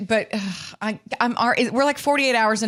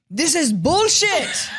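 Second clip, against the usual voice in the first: put-on Slovenian accent, much higher, faster; 7 semitones higher than usual. Comparing two men you are talking about, voice an imagined complaint, trying to sound like Luka. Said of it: "I'm just trying to sound like Luka".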